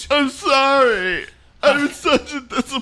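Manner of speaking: speaking through tears, words drawn out. Hugging Dad and getting blood on his suit, crying while talking. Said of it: "What are you crying?".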